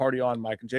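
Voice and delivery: ordinary delivery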